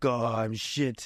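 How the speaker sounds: put-on, Italian-accented English. Retelling a cafe chat, the speaker imitates Pietro's Italian accent. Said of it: "This is my Italian accent".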